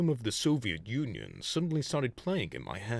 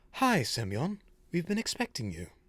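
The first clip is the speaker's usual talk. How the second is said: fancy put-on character voice, pitched higher; 6 semitones higher than usual. Voicing a club member greeting semyon: fancy put-on voice for a character. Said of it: "this guy's voice".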